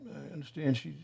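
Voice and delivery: very soft whisper, muttered to oneself.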